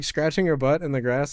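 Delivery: plain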